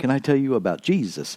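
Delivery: wry, sarcastic, tongue-in-cheek sales-pitch delivery. Imitating people who knock on doors: sarcastically imitating a door-knocker. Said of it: "I say that tongue in cheek and very sarcastically".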